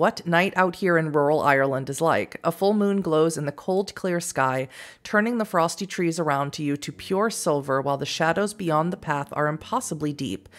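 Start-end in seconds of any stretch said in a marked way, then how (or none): none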